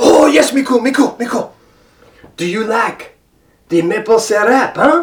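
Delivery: very bad put-on French-Canadian accent. Addressing Miku in a role-play; very bad fake French-Canadian accent. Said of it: "with my very bad, fake French-Canadian accent".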